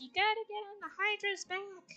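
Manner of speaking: high-pitched, hollered yell. Retelling a game character yelling during a boss fight: imitating Phil yelling. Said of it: "kept on yelling at us".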